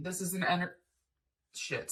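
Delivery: interrupted by hiccups. The speaker breaks off mid-word while explaining, hiccuping. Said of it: "sorry on the hiccups".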